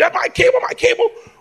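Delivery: very high-pitched, furious, angry shouting. Retelling following the cable repairman into the house: imitating own past yelling. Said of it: "walking behind him yelling".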